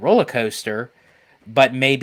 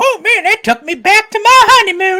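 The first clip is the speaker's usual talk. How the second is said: put-on, bad, very high, shrill, loud old-lady voice; 9 dB louder than usual. Imagining how she would react after the ride, bad elderly woman impression. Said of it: "that was a very bad impression of an elderly woman".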